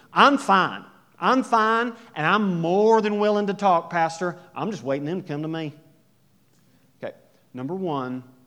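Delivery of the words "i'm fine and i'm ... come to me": raised put-on Southern accent. Acting out someone's argument to a pastor, in a Southern accent. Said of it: "I don't know why I do that accent, the Southern".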